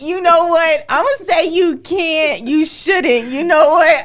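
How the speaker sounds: high, loud, laughing mock outrage.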